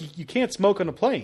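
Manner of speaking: ordinary talk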